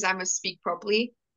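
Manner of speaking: normal talking voice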